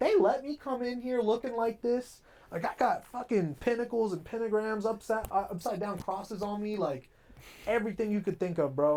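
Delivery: high-pitched, amazed, gushing voice.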